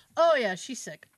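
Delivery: ordinary talk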